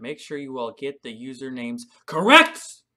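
much too loud, wide-ranging call-out.

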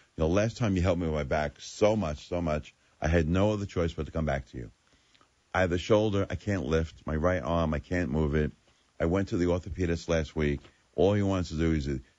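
usual speaking voice

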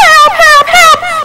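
very high, loud, repeated shrieking scream. A character screams for help while another one taunts them, screaming for help. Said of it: "Scream out loud".

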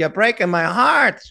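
high-pitched, loud, heavy guilt-tripping tone.

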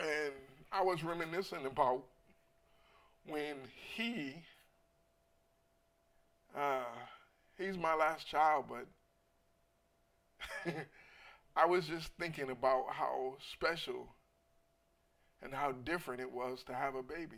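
crying tears of joy. Telling viewers about a son becoming a father, crying tears of joy. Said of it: "I'm crying tears of joy".

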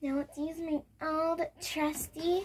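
most annoying, high, goofy silly voice. Cleaning dirty items after a shower, annoying put-on voice. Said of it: "Why do I talk like that?".

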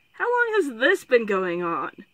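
tired, worn-out voice. Narrator reads a father questioning his summoned daughter, asking wearily. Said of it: "He asked wearily".

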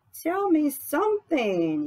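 eager, excited burst, very high and swooping. After another woman mentions coming to texas with her fiancé, she asks excitedly. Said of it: "Yeni said excitedly".

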